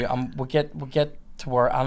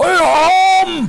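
very high, loud demonic voice, drawn-out I; 10 dB louder than usual. Retelling how someone, out of nowhere, replied in a devil voice. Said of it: "devil voice".

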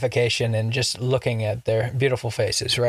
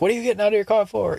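very high, bossy yelling; 10 semitones higher than usual. Retelling a video where a cop yells at a driver: imitating someone yelling. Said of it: "yelling at him mode".

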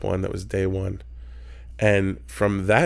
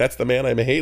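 normal talking voice

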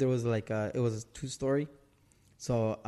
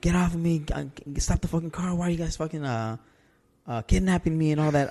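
screaming, higher pitch; 4 semitones higher, 4 dB louder than usual. Telling others about waking up and thinking they were being kidnapped, retelling own screaming. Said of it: "I was screaming".

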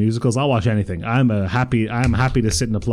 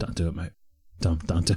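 put-on low-pitched English accent, hard tough-guy voice; 5 semitones lower, 7 dB quieter than usual. Retelling a stranger's warning not to get a dog: Jason Statham energy. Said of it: "Very, very Jason Statham energy".

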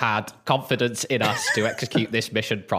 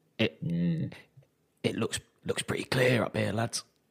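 hushed voice, quieter, slower; 6 dB quieter than usual. Player sneaking in with the party, speaking in character to the lads: hushed tone. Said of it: "in a hushed tone".

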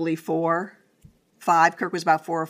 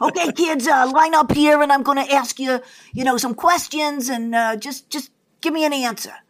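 put-on New York accent, much higher; 7 semitones higher, 4 dB louder than usual. Retelling an agent lining up kids on a couch to ask them questions, New York accent. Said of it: "she's talking with this New York accent".

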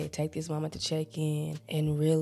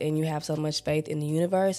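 usual speaking voice

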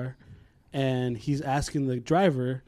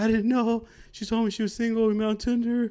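put-on frightened, fearful male voice; 8 semitones higher than usual. Speaker retells what a scared man said, imitating a fearful voice. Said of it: "the fear in that guy's voice and face".

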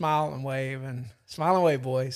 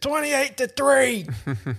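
put-on good-natured, teasing New England accent, high and swooping; 11 semitones higher, 4 dB louder than usual. Retelling what someone on the bus said to Gabe's Falcons shirt: New England accent. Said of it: "I heard in this New England accent".

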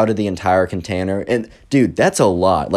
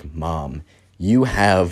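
mock furious, angry outburst, abruptly cut short; 3 semitones lower than usual. Retelling a wedding story, the groom speaking to his mother: imitating an angry groom. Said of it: "walks down angrily and is like".

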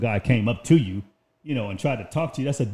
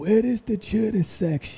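put-on old man voice, higher; 7 semitones higher than usual.

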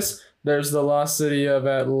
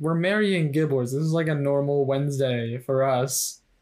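normal talking voice

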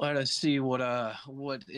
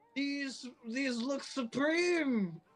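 high, slow, louder raised voice.

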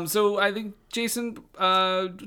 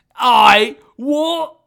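put-on British accent, louder; 3 semitones higher, 10 dB louder than usual. Reacting to someone's odd accent, the speaker tries one: put-on british accent. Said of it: "It sounds very much like one of the guys".

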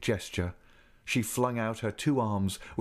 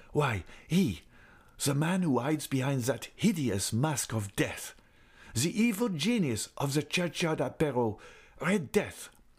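enraged, heated, temper completely lost; 4 semitones higher than usual. Raoul, having lost his temper, answers the girl who resisted him: angry, lost his temper. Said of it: "and at once lost his temper. "Who?" he repeated angrily".

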